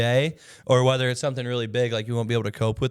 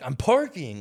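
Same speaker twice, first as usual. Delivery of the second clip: annoyed, irritated tone, getting mad. Retelling how the driver answered while a man with a gun approached, imitating someone getting mad. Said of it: "he's getting mad at us".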